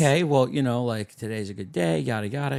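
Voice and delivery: ordinary talk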